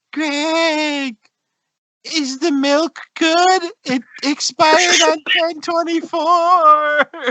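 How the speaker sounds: very high, eerie, spooky ghost voice. Imagining facing a ghost that speaks to Greg, in a ghost voice. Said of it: "you face a ghost that goes".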